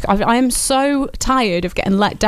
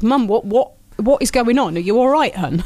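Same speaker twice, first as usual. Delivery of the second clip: ordinary talk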